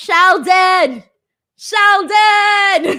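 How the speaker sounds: very loud, high, arena-crowd style shout. Speaker calling out to a viewer who gifted memberships, yelling a name. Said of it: "I'm yelling your name".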